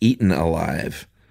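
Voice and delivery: ordinary talk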